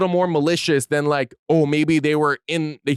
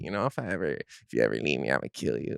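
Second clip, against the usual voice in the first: playful, half-joking, teasing, flirty tone; 13 semitones lower, 11 dB quieter than usual. Showing how the same line sounds when flirting: flirty, playful threat. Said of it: "he might just be flirting".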